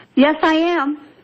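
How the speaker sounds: cheerful, bright and high voice. Answering a caller-in show host's greeting: cheerful voice. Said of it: "what a cheerful voice".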